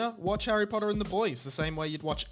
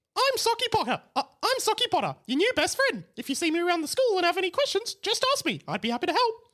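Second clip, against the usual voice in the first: loud, high, squeaky, bouncy puppet voice; 13 semitones higher, 5 dB louder than usual. Narrator voicing Harry's sock puppet addressing the school, loud squeaky Socky Potter voice. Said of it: "talking in a loud voice".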